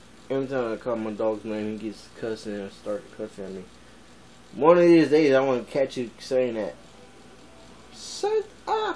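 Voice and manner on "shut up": whispered cow character voice. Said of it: "I do the voice of cow".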